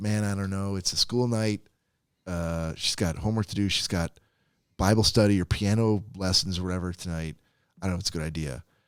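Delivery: ordinary delivery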